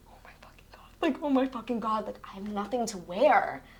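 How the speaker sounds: play-acted, frantic outburst of panic. Retelling a broken skirt before an audition, retelling own panic. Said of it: "I'm, like, shaking".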